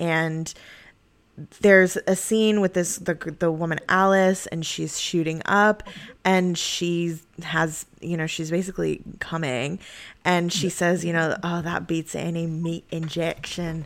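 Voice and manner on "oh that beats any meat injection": put-on soft, convincing Scottish accent. Speaker quotes the woman Alice from a scene, in a Scottish accent. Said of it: "That's a pretty good Scottish accent".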